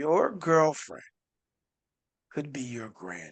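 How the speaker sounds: slow, soft, deliberate, spelled out word by word. Repeating your remark a second time, saying it slowly. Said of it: "I'm gonna say it slow".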